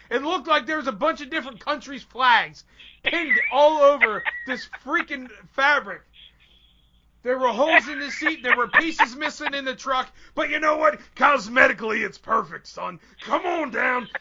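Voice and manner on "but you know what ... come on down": macho wrestler voice, wrestling promo style. Retelling an auto dealer's sales pitch in a Hulk Hogan voice. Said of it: "In your best needless Hulk to".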